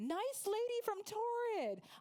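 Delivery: acted, full-lunged, high-pitched scream. Recalling a girl at Walmart calling out to her: retelling a scream. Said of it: "I heard a girl literally screaming".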